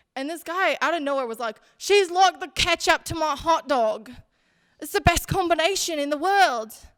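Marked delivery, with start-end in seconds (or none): 1.8-6.8 put-on raised, pitched-up British accent. Retelling a line a guy said on a dating show, in Love Island accent. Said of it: "so I'll try to do the accent".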